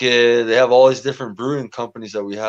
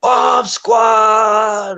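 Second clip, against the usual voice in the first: put-on shrill, very high drunken yell, "squad" drawn out; 11 semitones higher, 5 dB louder than usual. Recalling cheering for a fighter in a theater, retelling his yell. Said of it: "And I was yelling".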